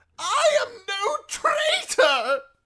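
very high, very loud, slow, drawn-out shrill screech. A prisoner, being locked up with the traitors, protests: screeching. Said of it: "screeched the prisoner".

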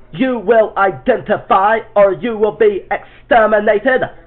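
very loud, harsh, choppy, stuttering, rising. Demonstrating a voice effect, the speaker does a harsh stuttery voice with rising pitch. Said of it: "you'll want to put in the program like this".

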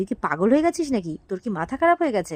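ordinary talk

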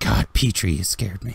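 muttered under the breath. Voicing a startled character who mutters under his breath: muttering under his breath. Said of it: "you hear him say something under his breath".

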